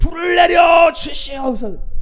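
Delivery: fervent, high, loud, slow crying out.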